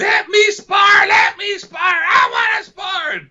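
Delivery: whiny tantrum yelling, very high and drawn-out. Retelling a fighter's tantrum at the ropes: imitating someone yelling. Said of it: "he's yelling at me".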